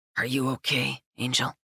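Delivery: murmuring close and low. Malachi speaks to the narrator as she looks up at him, murmuring. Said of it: "he murmurs".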